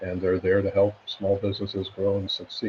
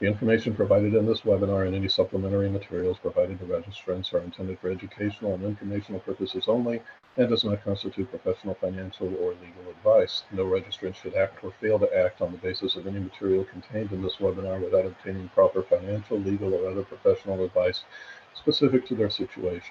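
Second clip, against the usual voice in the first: very fast, hurried reading rattled off at top speed. Host reads the required webinar disclaimer aloud to listeners, reading very fast. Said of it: "I'm going to read it as quickly as possible".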